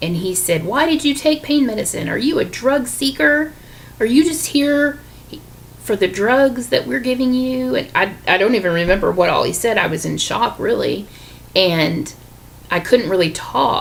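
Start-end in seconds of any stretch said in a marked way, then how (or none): 0.6-7.8 angry, high-pitched yelling. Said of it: "he yelled at me".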